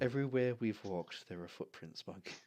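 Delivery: weary, worn-out sigh, then the line. Voicing Alara replying to the group: sighing, as Alara. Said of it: "she just sighs and says".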